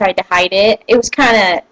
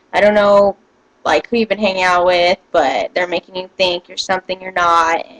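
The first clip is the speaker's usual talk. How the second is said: plain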